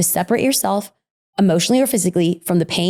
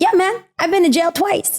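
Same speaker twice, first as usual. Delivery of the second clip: put-on heavy Mexican accent, very high voice; 10 semitones higher than usual. Quoting what his dad told him, imitating dad's thick mexican accent. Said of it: "my dad in his thick Mexican accent".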